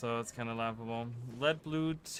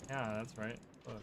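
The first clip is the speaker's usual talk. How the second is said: plain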